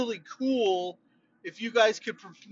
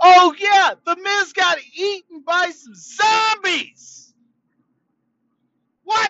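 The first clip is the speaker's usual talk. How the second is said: high-pitched, stretched-out, drawn-out shouted yell; 9 semitones higher, 8 dB louder than usual. Recalling from memory what happened at Backlash, yelling. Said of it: "Sorry for yelling".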